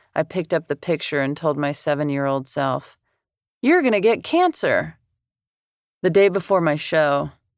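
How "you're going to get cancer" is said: acted bright, excited, high voice. The narrator speaks to their seven-year-old self in a photo, excited good-news voice. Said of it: "In the excited voice someone might use to deliver good news to a child".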